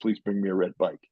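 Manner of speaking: plain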